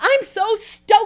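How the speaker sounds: very high, shrill, loud, excited outburst. Narrating a woman telling her friend across the hospital lunchroom table, exclaimed. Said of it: "exclaimed Lee".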